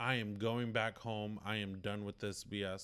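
plain

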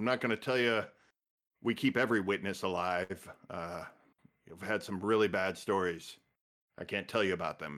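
mock-deadpan, flat, straight-faced delivery. Quoting a very serious man's remarks to people asking him, imitating deadpan delivery. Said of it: "deadpan kind of way".

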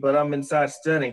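ordinary delivery

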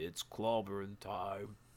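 zombie-like undead walking-corpse voice. Describing the doors swinging open as a zombie walks in, in a zombie The Thing voice. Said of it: "in like a sort of zombie-esque undead voice".

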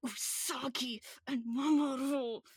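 spoken through clenched, gritted teeth. Imitating a girl correcting Sailor Moon names, mimicking talking through gritted teeth. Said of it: "Like through gritted teeth".

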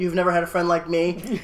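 ordinary delivery

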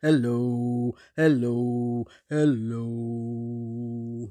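as low as possible, deep, slow, drawn-out. Leading a rhyme with hand motions, saying hello as low as possible. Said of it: "Let's say hello as low as we can".

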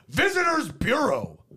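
high, emphatic, mock exclamation. Retelling asking for directions, repeating how the man answered: imitating an exclamation. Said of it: "He exclaimed".

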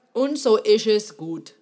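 loud, slow, unhurried phrase in German dialect. Closing a talk with a saying of her own: German dialect. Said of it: "as I would say in my German dialect".

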